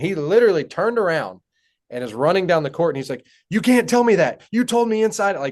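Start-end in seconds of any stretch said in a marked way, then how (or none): 3.5-5.4 mock freaked-out, frantic, agitated, pitched higher. Retelling how a player reacted after the speaker yelled, imitating him freaking out. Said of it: "he was like freaking out".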